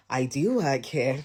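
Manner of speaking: slow, deliberately overly nice and extra-polite tone. Retelling a reply to a rude client: imitating a pointedly extra-polite reply. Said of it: "extra nice and polite".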